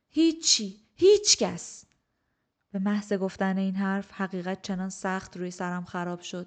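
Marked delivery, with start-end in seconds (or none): 0.1-1.8 very high, loud shouted yell. Narrator reads the first-person character answering a spiteful old woman, shouting. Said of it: "سرش داد زدم".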